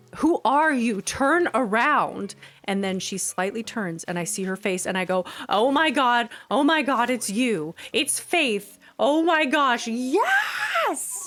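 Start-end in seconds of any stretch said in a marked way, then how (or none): 5.5-11.3 acted, overjoyed, surprised, high swooping exclamation. Recreating her reaction on seeing Faith's face, retelling excited, overjoyed surprise. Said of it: "That's my recreation of the reaction".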